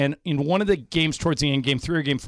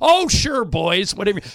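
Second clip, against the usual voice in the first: rough, raspy, rasping delivery; 4 semitones higher, 3 dB louder than usual. Retelling how Marge Schott answered their phone call: raspy Marge Schott voice. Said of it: "She talked with a really raspy voice".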